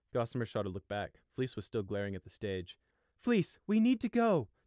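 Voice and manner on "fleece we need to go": very high, drawn-out, slow begging plea. Narrator voicing the mother calling to Fleece as the crowd shouts, pleading. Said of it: "their mother pleaded".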